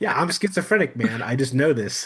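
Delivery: offhand, casual, plain-spoken, matter-of-fact tone. Retelling another radio caller's answer: imitating a casual, matter-of-fact statement. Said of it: "he just lays it out there".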